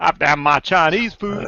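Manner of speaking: put-on American Southern accent, preacher-like Baptist style. Told they sound Southern Baptist, the speaker repeats a phrase in a Southern Baptist accent. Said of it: "you go very Southern Baptist when you say that".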